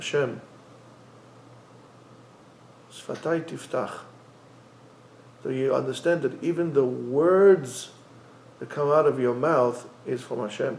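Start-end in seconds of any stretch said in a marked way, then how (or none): 0.0-3.9 barely voiced, unhurried, very slow whisper. Showing how to begin the prayer, slower prayer pace. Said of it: "start the tefillah slower".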